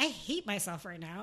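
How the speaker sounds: plain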